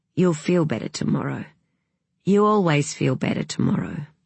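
ordinary delivery

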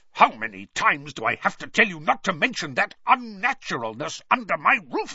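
seething, angry hiss with climbing pitch. A narrator reads a man scolding Harry for swearing, angry hiss. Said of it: "he hissed".

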